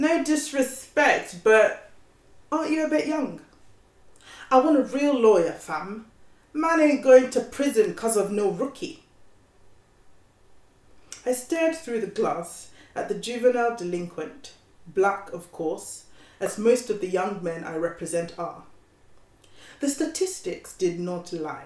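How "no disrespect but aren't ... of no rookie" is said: put-on higher-pitched British accent. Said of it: "gonna try to do my best British accent".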